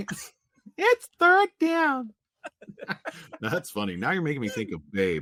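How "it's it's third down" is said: very high-pitched, whiny little voice. Retelling how someone tried to say a line: imitating a little whiny voice. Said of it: "a little whiny voice".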